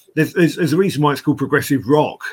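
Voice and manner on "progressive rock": heavy stress on the word rock. Naming the style of music, stress on rock. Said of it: "I'm just emphasizing the second word there".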